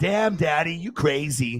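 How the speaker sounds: slow, drawn-out dog voice. Voicing a pet dog scolding its owner: voicing the dog. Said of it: "She's like".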